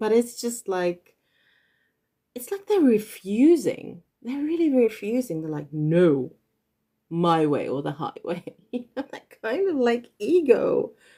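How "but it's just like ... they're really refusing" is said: speaking while giggling, laughing through the words. Apologizing to viewers mid-story, the speaker keeps laughing while talking. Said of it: "I'm sorry for laughing".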